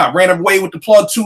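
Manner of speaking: ordinary talk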